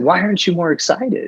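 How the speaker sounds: high, giddy, excited voice.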